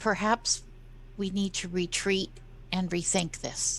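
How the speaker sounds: hushed, very quiet, soft speech. A player speaking in character to the group: very quiet voice. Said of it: "I say in a in a very quiet voice".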